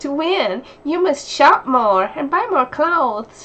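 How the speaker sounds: perky game-announcer chirp, very loud. Mocking a game's voiceover, the speaker voices a Barbie game: chirpy Barbie game voice. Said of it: "She should be voicing a Barbie game".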